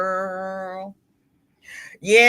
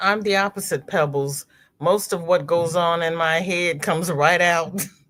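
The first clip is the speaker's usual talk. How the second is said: ordinary talk, nothing marked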